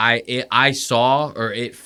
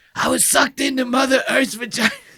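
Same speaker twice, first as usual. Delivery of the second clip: rasping voice pitched very high; 13 semitones higher than usual. Quoting a man's line by doing a raspy voice impression of him. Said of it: "he has that raspy ass voice".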